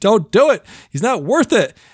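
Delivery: put-on high-pitched yelling, like several voices shouting. Describing a comedy scene, the speaker acts out people below, retelling crowd yelling. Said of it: "standing down there and yelling at him".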